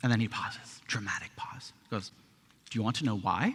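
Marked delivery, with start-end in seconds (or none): 2.7-3.5 cute, put-on little Swedish accent. Retelling a man's dramatic question to the group, in his cute little Swedish accent. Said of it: "In his cute little Swedish accent".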